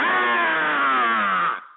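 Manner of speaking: rough, drawn-out war cry. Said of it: "give me your war cry".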